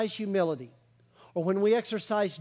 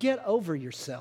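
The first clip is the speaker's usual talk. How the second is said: nicer, kindly, fatherly tone; 3 semitones lower than usual. Speaking to listeners who disagree, the speaker rephrases nicely, like a dad to his children. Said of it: "like a dad to his children".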